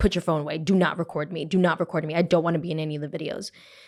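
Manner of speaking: imitated very serious voice. Retelling how a man demanded not to be recorded: imitating someone very serious. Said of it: "he got very serious and he was like".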